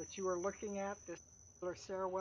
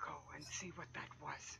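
very soft, faint, hushed, barely-there speaking voice; 5 semitones lower, 9 dB quieter than usual. The game master voices a woman the players overhear, very soft speaking. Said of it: "You hear a very soft speaking".

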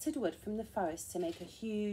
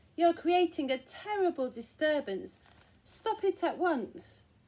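loud, high, cried-out scolding; 7 semitones higher, 5 dB louder than usual. A mail carrier calls up to the giant causing the ground-shaking: crying out. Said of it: "the mail carrier cried".

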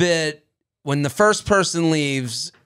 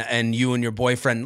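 ordinary talk, nothing marked

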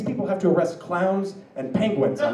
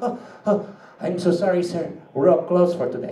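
put-on Filipino accent in English. Retelling what the Filipino chef said to a customer, Filipino accent. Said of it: "Which is a very good Filipino accent".

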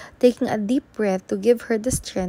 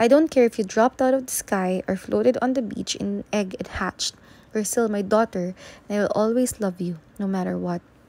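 ordinary delivery

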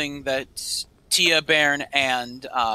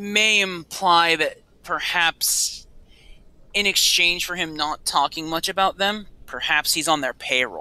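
normal talking voice

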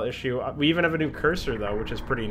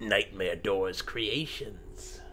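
very soft, deep, hushed movie-trailer announcer voice; 5 semitones lower, 9 dB quieter than usual. Opening a map playthrough video, announcing the map's creators in a trailer voice. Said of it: "I had to do a little trailer voice".

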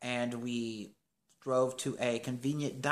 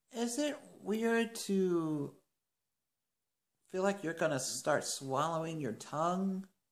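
mock-nonchalant casual tone, higher pitch; 6 semitones higher than usual. Retelling asking everyone in a tight space, mock-nonchalant question. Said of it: "just kind of was just like nonchalantly just kind of asking everybody".

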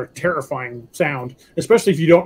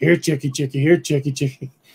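put-on raspy voice. Retelling the voice he heard from the woods one night, in a raspy voice from the woods. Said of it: "heard this raspy".

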